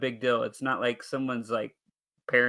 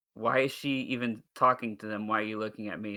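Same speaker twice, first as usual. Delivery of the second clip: usual speaking voice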